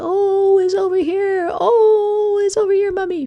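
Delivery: very high, loud, drawn-out wailing crying scream. Explaining open syllables, the speaker voices the letter o left alone, screaming for mummy. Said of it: "he starts screaming for his mummy".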